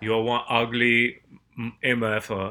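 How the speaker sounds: Austrian action-hero accent impression. Told the last try sounded French, the speaker redoes the movie line: Arnold impression. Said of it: "I'm Arnold".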